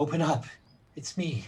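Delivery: calling out. Game master voicing a character downstairs, yelling from downstairs. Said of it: "downstairs yelling".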